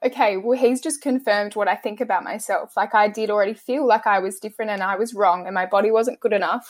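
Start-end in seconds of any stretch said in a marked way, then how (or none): none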